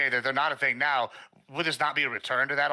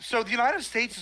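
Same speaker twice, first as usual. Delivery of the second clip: voice breaking up into a high squeak; 10 semitones higher than usual. Starting to answer another speaker's question, voice cracking. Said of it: "my voice cracked".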